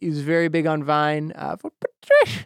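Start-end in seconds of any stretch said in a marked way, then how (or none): 1.6-2.5 very high-pitched, silly put-on voice. Telling viewers about someone very big on Vine, slip into a Chrish voice. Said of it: "I don't know why I did that voice".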